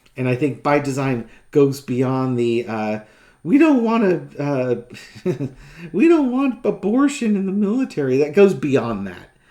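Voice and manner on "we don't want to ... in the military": high, swooping whiny voice, prim and shocked. Speaker mocks what a man says, mock whiny pearl-clutching voice. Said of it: "That's my whiny pearl clutching voice".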